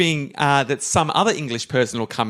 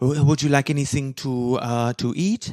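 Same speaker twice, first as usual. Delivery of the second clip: put-on French barmaid character voice. Playing a barmaid asking a customer if he wants to eat, French barmaid accent. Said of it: "my French barmaid accent".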